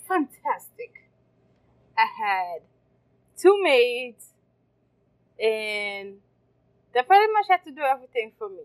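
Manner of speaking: loud, swooping, sarcastic, ironic delivery. Describing growing up with maids, sarcastic. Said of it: "And I'm being sarcastic".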